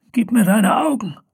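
hoarse, high croaking voice. The shaman speaks to the elf Farodin, croaking hoarsely. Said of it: "krächzte die Schamanin heiser".

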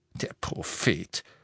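whispered, hushed, breathy, mocking scoff. Hearing a friend cite a newspaper article, a man answers scoffing. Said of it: "spottete Ted".

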